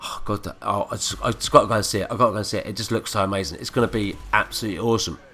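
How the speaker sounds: normal talking voice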